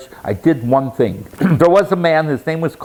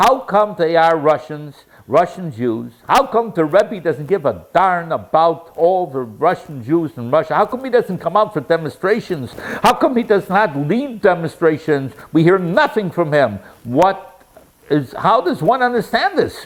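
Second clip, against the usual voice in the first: indignant, accusing, angry, demanding tone; 2 semitones higher than usual. Retelling a lady's angry outburst at a talk: imitating an angry lady yelling. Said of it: "and she yelled out".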